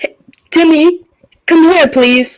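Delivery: high yell calling up. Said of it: "And I just yell".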